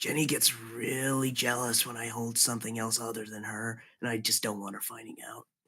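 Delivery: soft, hushed half-whispered aside. A character leans over to confide in someone, half-whispering. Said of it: "he leans over and he like whispers".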